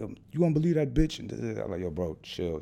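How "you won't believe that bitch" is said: acted out, heated, high, angry shouting. Retelling how an older man yelled at the speaker, imitating him yelling. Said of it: "he's yelling at me like".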